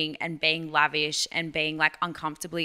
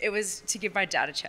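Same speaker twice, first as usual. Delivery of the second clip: emotional, welling up, fighting to stay composed; 3 semitones higher, 3 dB quieter than usual. A podcast guest, talking about something for their dad, getting emotional. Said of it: "I don't want to get emotional".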